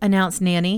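plain

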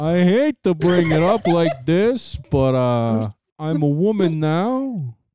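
put-on mock announcer voice. Acting out a mock announcement as Andrew Cuomo: Andrew Cuomo impression. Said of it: "you sound like you're trying to train his voice".

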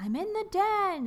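very high-pitched, drawn-out, long-held yell. Retelling how Walter calls out to Anna from the den, retelling a yell. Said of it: "he's yelling".

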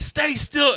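very high, loud, drill-sergeant-style yelling.

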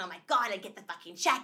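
put-on loud, dramatic voice with New York accent. Retelling a trainer's dramatic sales talk: imitating Billy Robbins, loud New York.

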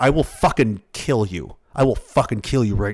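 low, dead-serious, in-your-face menacing tone. Retelling a grown man threatening a seventeen-year-old: imitating a serious threat. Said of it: "he seems very serious".

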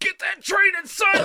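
put-on, very high, loud hype shout.

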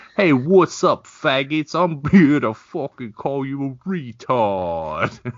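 loud New York accent. Describing going straight to a New York accent, doing an Andrew Dice Clay New York accent. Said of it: "I immediately start with a New York accent".

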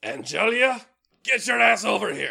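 very high, all-out, full-lung shout. Narrating a character who sees the octopus escape and calls a rigger: shouting at top of lungs. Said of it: "top of his lungs, he just starts shouting".

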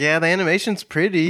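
normal talking voice

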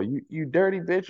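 put-on yelling, girl voice. Retelling a girl in the back seat yelling out the window; retelling a yell. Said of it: "She yells out the window".

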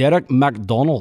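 full-volume, very loud Scottish accent. Asked again to do his best scottish accent, says a name; scottish accent. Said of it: "Do that one more time".

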